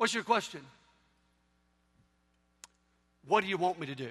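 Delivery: big, deep voice, rattled off quickly. Imagining how God would answer people, in a big deep God voice. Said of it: "deep voice of God".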